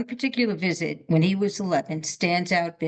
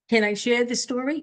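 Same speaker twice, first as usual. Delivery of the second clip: rising lilt, climbing up to story; 5 semitones higher than usual. Practising the question alone after a coach's example: rising tone. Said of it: "Can you try that?".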